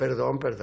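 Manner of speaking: ordinary talk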